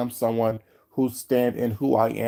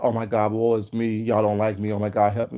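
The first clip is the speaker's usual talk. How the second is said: put-on, self-pitying, woe-is-me whiny lament. Explaining a past remark, mocking how it was not meant: mock self-pitying whine. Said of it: "I say that not as".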